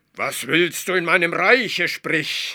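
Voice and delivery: brusque, barking, high, loud commanding snap. The ruler of a hidden realm confronts an intruder: snapping at him. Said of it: "herrschte ihn die Haarmilch an".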